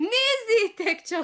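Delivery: very high, loud shout through laughter. A king's daughter mocks the prince standing first in the line; shouted while laughing. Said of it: "kiáltotta nevetve".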